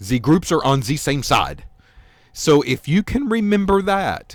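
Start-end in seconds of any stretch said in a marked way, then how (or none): 0.0-1.6 put-on Russian accent, "the" pronounced with Z. Showing students a memory phrase for Z and E: Russian accent. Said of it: "You've got to sound Russian".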